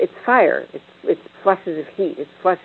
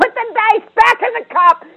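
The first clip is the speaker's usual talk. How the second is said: very high-pitched, loud yell; 4 dB louder than usual. Speaker quotes a woman recounting the moment she lost it, retelling a yell. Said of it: "I yelled at him".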